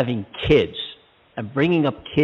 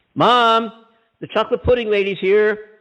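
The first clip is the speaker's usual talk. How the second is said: put-on high, loud yell in a small child's voice; 9 semitones higher than usual. Retelling calling up the stairs to Mom as a small child: imitating a yell. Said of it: "I yelled up the stairs".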